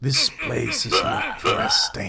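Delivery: loud, booming voice. Reading out what a game voice says: booming voice. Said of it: "A booming voice crushes your eardrums".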